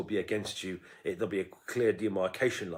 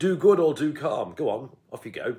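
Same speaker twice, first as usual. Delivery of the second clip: very loud, swooping, sarcastic, goading taunting tone; 6 semitones higher, 9 dB louder than usual. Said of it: "He's talking sarcastically and ironically".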